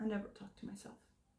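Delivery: very quiet, whispered, dead-flat deadpan. Retelling his reply when told talking to yourself is healthy, imitating a deadpan delivery. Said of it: "He literally deadpans".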